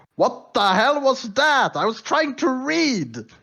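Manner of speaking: furious, very angry, very high-pitched outburst. Narrator voicing someone rushing downstairs after a magical mishap, very angry voice. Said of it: "very angry voice like".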